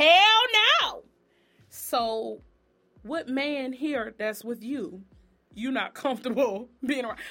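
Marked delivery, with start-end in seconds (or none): 0.0-1.0 shrill, very high, very loud outburst. Retell how Portia answers the guy who was there, retelling a yell. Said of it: "she yells out".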